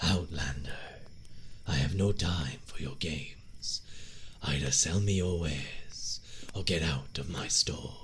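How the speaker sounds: gravelly voice pushed from the back of the throat. Showing how Dunmers sound, in a gravelly Dunmer voice. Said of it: "It's very gravelly, very back of the throat".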